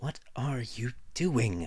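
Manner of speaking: sharp, angry, hissing delivery. Narrator reads a woman's question to a man clambering to his feet, hissed question. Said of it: "she asked in a hiss".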